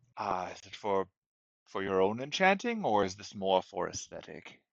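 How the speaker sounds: very low, very deep, deep-chested voice. Voicing a shop owner answering a customer's request, in a very deep voice. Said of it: "in a very deep voice".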